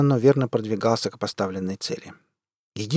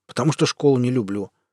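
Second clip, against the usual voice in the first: plain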